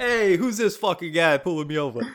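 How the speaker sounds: imitation New Jersey accent. Speaker acting out a driver being pulled over by a cop, in a New Jersey accent. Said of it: "Anytime there's an accent".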